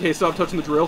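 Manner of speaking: ordinary talk, nothing marked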